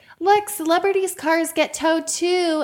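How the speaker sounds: very high, shrill scolding shout. Retelling how a woman yelled at her kids near a celebrity: imitating a woman yelling. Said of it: "yelling at her kids".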